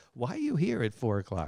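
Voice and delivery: sarcastic jabbing tone. Retelling the look the other speaker gave him early on: imitating a sarcastic question. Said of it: "That was my sarcastic look".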